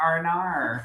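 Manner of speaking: high, put-on Australian accent on the vowels. Showing how to say "oh no" in an Australian accent: mock Australian accent. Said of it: "you say it so".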